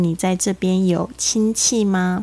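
ordinary talk

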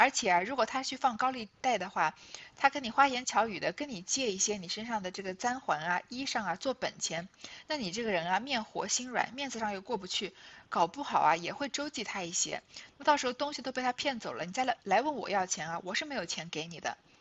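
plain

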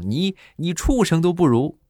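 very high-pitched, bellowing, full-throated shout. Recounting a quarrel, quoting what the other person yelled: retelling a loud shout. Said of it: "扯着嗓门大声的就冲我就吼".

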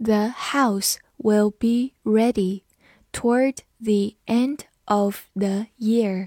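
slow, careful reading, word by word.

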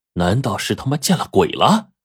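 ordinary delivery, nothing marked

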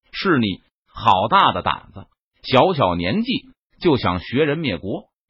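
ordinary delivery

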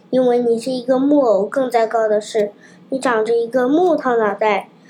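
ordinary talk

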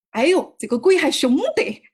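speaking in Sichuan dialect. Retelling what a man said after he fell down, quoting him in Sichuan dialect. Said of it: "我用四川话表达一下".

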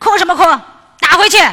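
fiery, very loud, high-pitched, fierce scolding. Imitating how a fiery mother answers her crying son: imitating a fiery scolding mother. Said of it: "比较麻辣那种妈妈".

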